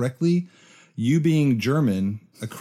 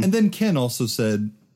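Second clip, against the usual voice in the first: ordinary delivery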